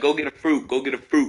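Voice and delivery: ordinary talk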